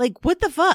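high, loud shocked outburst. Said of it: "was like".

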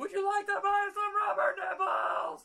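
shrill scream, very high and very loud. Retelling screaming a line out a window while drunk: imitating someone screaming. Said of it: "we're just screaming".

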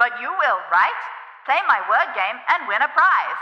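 loud mechanical robot voice from a speaker. A robot toy invites the players to its word game: mechanical robot voice. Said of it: "a mechanical voice comes out of a speaker".

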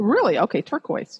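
startled, shocked, surprised disbelief. Asking which crystal is best for overall health, hearing the answer turquoise, shocked. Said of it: "you sounded shocked".

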